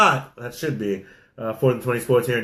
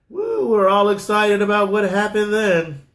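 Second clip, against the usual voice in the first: very high, mock-cheery, sarcastic fake excitement; 9 semitones higher, 3 dB louder than usual. Previewing Championship Sunday on a sports show: sarcastic fake excitement. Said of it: "that was sarcasm".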